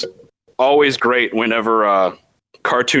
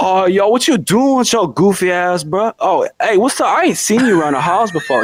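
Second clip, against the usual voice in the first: put-on DMV regional accent; 9 semitones higher than usual. Imitating a kid in a POV video: imitating a forced DMV accent. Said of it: "heavily forced D M V accent".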